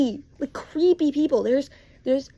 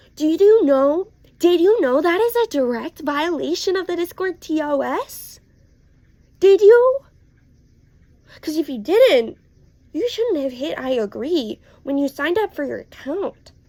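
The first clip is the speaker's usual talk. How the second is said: sarcastic, sassy, worked-up, heated tone. Ranting about underage users on Discord servers, sassy. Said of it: "I'm sorry I'm getting sassy".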